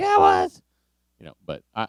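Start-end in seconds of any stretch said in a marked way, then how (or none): 0.0-0.6 put-on argumentative tone, higher. Acting out a coworker arguing over moldy food: imitating someone arguing. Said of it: "that's the arguing voice".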